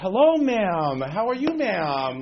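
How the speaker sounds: very slow, drawn-out, prim, la-di-da hoity-toity politeness. Speaker retells greeting two women sitting by the door, hoity-toity voice. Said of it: "very hoity-toity".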